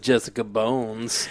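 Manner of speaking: mock quiet muttering. Retelling a line a guest said just under his breath: imitating Jason muttering under his breath. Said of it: "just under his breath".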